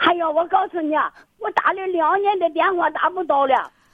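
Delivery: overexcited, worked-up, tearful rush of words.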